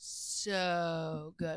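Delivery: "so" stretched out with many drawn o sounds. Retelling how Tommy answered whether the show was good: long drawn-out so. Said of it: "a bunch of O's".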